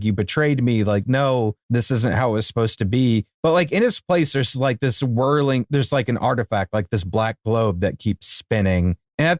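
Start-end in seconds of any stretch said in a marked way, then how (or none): none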